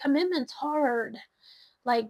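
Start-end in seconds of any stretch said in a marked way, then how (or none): 0.0-1.2 mock whiny, complaining voice. Voicing a phrase the way they heard it, mock-whiny voice. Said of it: "I heard it in a kind of like a whiny voice".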